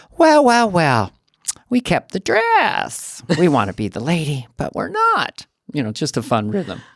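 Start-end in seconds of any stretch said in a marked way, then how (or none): 0.2-5.5 high, slow, swooping, superior, condescending drawl. Explaining why the character is funny, the speaker does a condescending Church Lady impression. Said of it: "church lady is funny to me because its condescension and being patronizing and passive aggressive".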